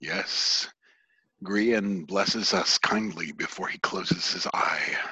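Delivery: sonorous, deep-chested, resonant and soft. Narrator voicing a figure who answers a greeting, deep and resonant voice. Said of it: "In a deep and resonant voice".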